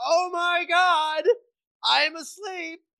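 shrill, very high, very slow, top-of-the-lungs scream. Retelling a lucid dream, imitating own past screaming. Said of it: "I was screaming at the top of my lungs".

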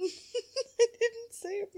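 very high, slow squeal through laughter.

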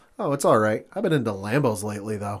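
put-on rude, snarky tone. Retelling a TV scene, quoting a character's reply: imitating a snarky, rude reply. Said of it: "being as snarky and rude as possible".

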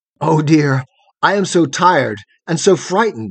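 ordinary delivery

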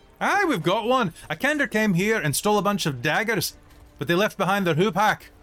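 put-on female dwarf voice, very high-pitched. A game master voices a dwarf woman answering a player asking about a hupak: female dwarf character voice.

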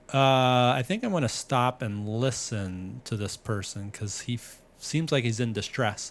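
ordinary talk

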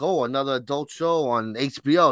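ordinary delivery

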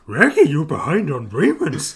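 loud, big cartoon dog voice with swooping pitch. Trading a running joke with a co-host, in Scooby-Doo voice. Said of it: "us doing this voice".

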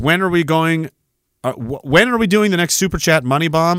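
ordinary talk

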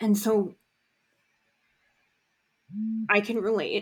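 a little choked up. Saying they can relate as the topic brings up a dad, a little choked up. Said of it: "I'm getting a little choked up".

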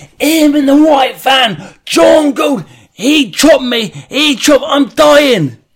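shrill, very high, loud scream with words dragged out. Retelling what the wounded man screamed as the van drove past: imitating a man screaming. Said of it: "He's screaming".

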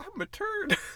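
put-on voice, very high. Joking about what a poo would say: talking poo voice. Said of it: "'Cause that's what poo says".

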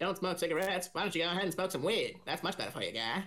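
put-on, cartoon-style Canadian accent. Joking about smoking weed instead of cigarettes: Canadian from South Park voice. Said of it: "I turned Canadian from South Park there".

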